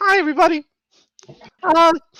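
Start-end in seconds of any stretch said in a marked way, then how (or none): 0.0-0.6 put-on little girl voice, higher. Voicing the host body, saying hello: sounding like a little girl. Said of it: "Why do you sound like a little girl?".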